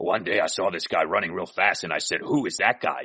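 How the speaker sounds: fake rough, raspy voice. Quoting Mike talking about the other speaker: raspy Mike voice. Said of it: "in that raspy voice said".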